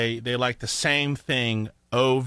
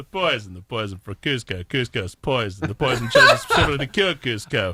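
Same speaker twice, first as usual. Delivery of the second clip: put-on cartoon henchman voice; 3 dB louder than usual. Doing a voice impression of Kronk's line about the poison: Kronk voice impression. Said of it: "two voice impressions".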